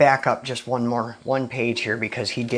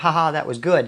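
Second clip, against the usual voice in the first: ordinary talk, nothing marked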